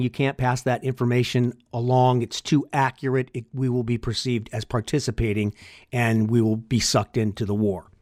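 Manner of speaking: normal talking voice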